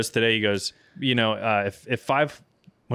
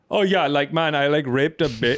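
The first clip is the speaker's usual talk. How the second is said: high-pitched, put-on fake Indian accent; 5 semitones higher, 4 dB louder than usual. Riffing on the kind of jokes a comedian would tell, in a put-on Indian accent. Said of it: "I just can't do anything but the Indian voice now".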